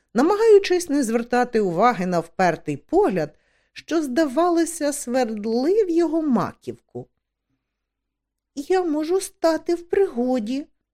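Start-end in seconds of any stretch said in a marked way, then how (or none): 8.6-10.7 put-on high, childlike young girl's voice. Esk, ordered home, speaks up to Hender at his board: said quietly. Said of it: "стиха промовила Еск".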